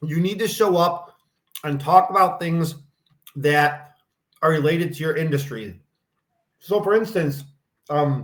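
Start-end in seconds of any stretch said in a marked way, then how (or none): 6.6-8.2 talking while chewing mid-sentence. Speaker giving advice while eating dinner at the same time, talking while chewing. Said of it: "I'm chewing here".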